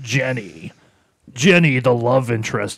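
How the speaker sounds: loud, drawn-out movie trailer announcer voice. Imitating the announcer in an old dubbed trailer: trailer announcer voice. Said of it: "the announcer's like".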